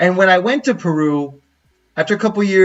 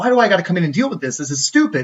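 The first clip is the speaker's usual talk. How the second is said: mock irritated, fed-up griping in angry dad voice. Retelling how the dad complained about having to come in: imitating an angry dad. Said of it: "he's pissed".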